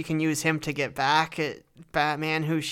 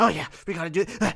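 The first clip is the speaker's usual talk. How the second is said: heavy, troll-like, breathing voice. Describing how the Penguin is played in the movie, heavy-breathing Frank Reynolds voice. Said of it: "breathing heavily as like a troll".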